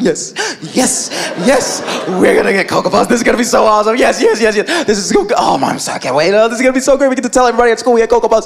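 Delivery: put-on giddy, rattled-off excited kid voice. Retelling skipping around at home after getting the cereal: imitating excited kids. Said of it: "skipping around, like".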